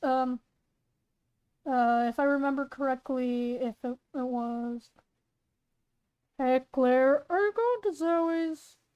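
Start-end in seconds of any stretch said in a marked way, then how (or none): 6.4-8.8 casual, fatherly dad character voice. Narrator reading a scene aloud, voicing Claire's dad as he enters: Claire's dad character voice. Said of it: "I gotta do Claire's dad's voice".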